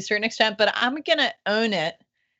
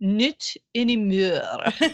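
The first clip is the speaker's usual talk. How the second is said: hammed-up, terrible put-on French accent. Retelling how he answers the woman whose piano was crushed, in Peter Sellers's horrible fake French accent. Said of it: "in his horrible fake French accent".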